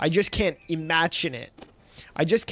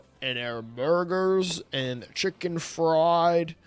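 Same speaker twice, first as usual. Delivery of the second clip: put-on European accent, vocal fry, drawn out. Asking someone to try an American accent, demonstrating in a put-on European accent. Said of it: "I don't know why I did a European accent".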